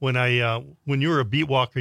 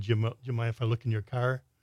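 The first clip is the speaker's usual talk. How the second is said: usual speaking voice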